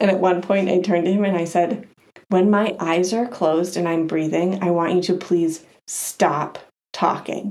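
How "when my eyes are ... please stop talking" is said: ordinary talk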